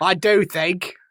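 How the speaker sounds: light, subtle put-on British accent. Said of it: "a very subtle British accent there".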